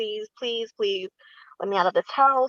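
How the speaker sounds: put-on begging, pleading tone. Retelling begging the cousin through a window to be let out: retelling own begging. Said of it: "begging him through the window".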